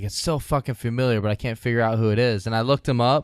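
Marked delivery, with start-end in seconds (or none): none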